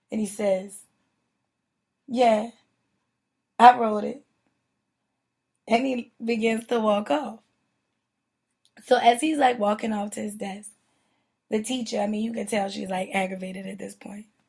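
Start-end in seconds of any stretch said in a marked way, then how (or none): 2.1-4.2 mock brash, very loud, swaggering, cocky delivery. Retelling how a man answered the teacher, imitating a cocky reply. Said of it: "with this like cocky attitude".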